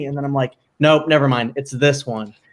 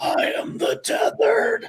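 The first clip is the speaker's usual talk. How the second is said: creepy, very slow whisper, every word stretched; 6 dB quieter than usual. Praising a horror performance, quoting its line: imitating Lupita Nyong'o's creepy voice in Us. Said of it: "the voice that she gives it, and she goes like".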